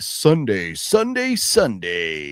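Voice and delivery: very slow, drawn-out, swooping monster truck announcer hype. Greeting the audience on a Sunday, in a monster truck announcer voice. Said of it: "Monster Truck announcer voice".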